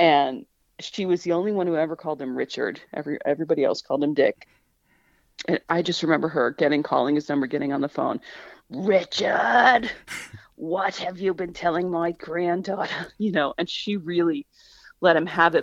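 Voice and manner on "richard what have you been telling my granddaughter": put-on thick New England accent, laid on heavily, drawn out. Retelling the grandmother phoning Richard about her granddaughter, thick New England accent. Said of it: "She had a very like thick New England accent".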